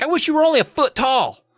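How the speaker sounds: half-teasing, exasperated tone, very high-pitched. Retelling a character's line to her brother: imitating joking frustration. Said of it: "kinda jokingly against her brother, but also frustrated".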